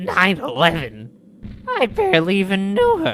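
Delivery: very loud, shrill, wildly sing-song swooping blurt. Recalling a line he once said, doing an impression of him. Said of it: "Remember that time he was like".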